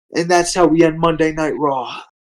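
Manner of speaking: plain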